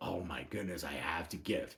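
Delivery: very quiet, very low, begrudging, grudging mutter. Explaining how not to give to the church: mock begrudging tone. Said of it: "not begrudgingly".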